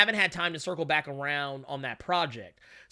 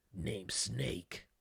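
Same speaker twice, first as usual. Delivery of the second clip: very quiet, breathy whisper, breathed out, barely audible; 8 semitones lower, 12 dB quieter than usual. Friends discussing where Solid Snake came from; speaker gives his name in Snake's voice. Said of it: "It's so easy to do uh Snake's voice".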